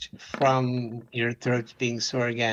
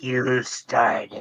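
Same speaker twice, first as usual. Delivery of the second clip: rough, rasping, creaky voice. Game narrator telling the players what they hear, in a raspy voice. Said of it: "You hear in a raspy voice".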